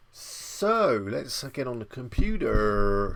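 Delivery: put-on slow, drawn-out American accent. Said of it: "Don't know why I said that in an American accent".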